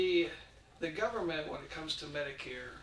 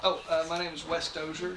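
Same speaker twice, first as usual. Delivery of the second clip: louder, raised voice. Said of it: "Can you speak up".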